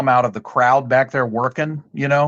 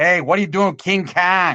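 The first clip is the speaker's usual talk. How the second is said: put-on higher-pitched man's voice, Chicago accent; 5 semitones higher than usual. Remembering a man the speakers loved, quote him in that chicago accent of his. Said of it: "that Chicago accent of his".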